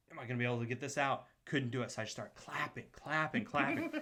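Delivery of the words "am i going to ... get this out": fast, panicked, rattled-off blurting. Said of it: "I start just freaking out".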